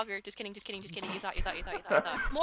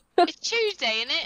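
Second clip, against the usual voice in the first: very loud, high put-on British accent; 7 semitones higher, 9 dB louder than usual. Teased about it, the speaker keeps talking in a British accent. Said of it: "I have to stop with these accents".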